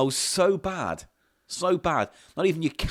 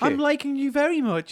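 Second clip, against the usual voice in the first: very high-pitched, flirty woman's voice; 12 semitones higher than usual. Acting out a lady chatting up a DJ: playing a lady chatting someone up. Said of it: "you're the lady".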